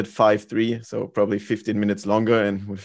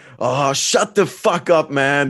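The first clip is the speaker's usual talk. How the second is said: high, mock shout as if from far away; 5 semitones higher, 4 dB louder than usual. Recalling a lost game, the speaker imitates Alex shouting from the back. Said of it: "Alex was shouting from the back".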